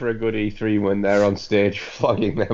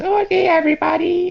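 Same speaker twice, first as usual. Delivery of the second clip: very high, loud, over-the-top anime voice; 5 dB louder than usual. Friend describing a character from the trailers to the others, ultra japanese anime voice. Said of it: "an ultra Japanese anime voice".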